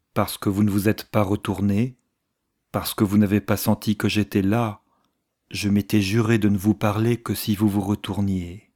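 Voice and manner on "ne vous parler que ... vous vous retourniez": ordinary delivery, nothing marked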